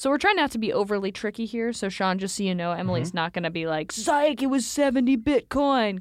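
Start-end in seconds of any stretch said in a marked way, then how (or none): 3.9-6.0 slow, deliberate, high, drawn-out voice. Joking about what another player might say in the game: Emily impression. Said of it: "that's a great Emily impression".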